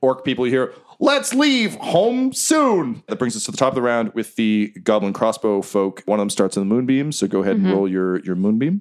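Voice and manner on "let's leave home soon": slow, very high, drawn-out yell. Voicing fleeing enemies calling out mid-fight: yelling to friends. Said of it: "You can hear them kind of yelling to their friends".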